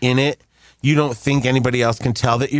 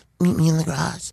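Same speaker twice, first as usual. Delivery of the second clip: put-on acted girl voice; 4 semitones higher than usual. Retelling a phone call, answering before hanging up: put-on girl's voice. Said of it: "I said it in a girl's voice".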